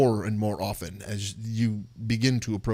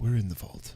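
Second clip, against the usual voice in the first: hushed whisper, words made with breath only. Voicing Esmeralda as the party enters a narrow hallway: Esmeralda whispering. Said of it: "Esmeralda whispers".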